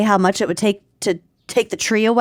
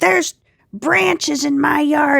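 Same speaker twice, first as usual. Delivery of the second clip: high, slow, raspy yell; 6 semitones higher than usual. Retelling what the neighbor said when she came out: imitating a neighbor yelling. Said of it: "she comes out and she starts yelling".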